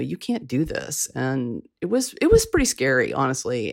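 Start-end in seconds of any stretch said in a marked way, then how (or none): none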